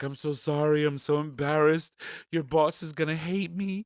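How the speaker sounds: weepy, tearful, crying, through-the-tears voice. Retelling an aunt's apology, imitating someone crying. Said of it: "she's crying".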